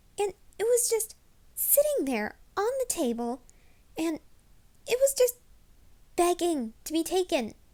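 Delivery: high, loud, excited pleading tone.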